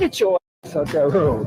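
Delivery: low, motherly scolding voice. Retelling what an older woman bus driver said from her window, imitating a motherly tone. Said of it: "in this really motherly tone said".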